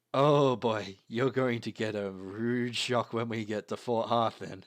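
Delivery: loud, laughing helplessly through the words. A narrator voices a character who bursts out laughing at the party, laughing while speaking. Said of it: "he pisses himself laughing and says".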